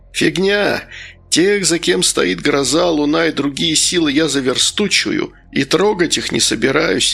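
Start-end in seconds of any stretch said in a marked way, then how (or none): none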